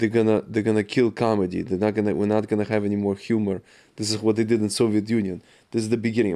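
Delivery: plain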